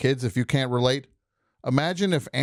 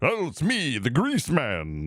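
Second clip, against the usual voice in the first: radio DJ voice swinging up and down in pitch. Showing another speaker how a terrible DJ sounded: Grease Man impression. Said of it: "He sounded like this".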